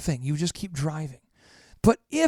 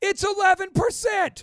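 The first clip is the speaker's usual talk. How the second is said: full-on, very high, shrill yelling. Answering a question about the advertising number, yelling. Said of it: "Why are you yelling?".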